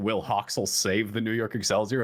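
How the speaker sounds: ordinary talk, nothing marked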